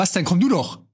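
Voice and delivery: rough, aggressive, antisocial street-tough taunting tone. Imagined reply to someone who is provoking you, in an aggressive, antisocial tone. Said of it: "aber halt so richtig asozial. So Taxi-Driver-mäßig, als ob mich einer anmacht".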